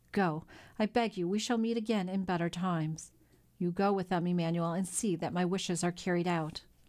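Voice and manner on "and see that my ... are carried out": ordinary delivery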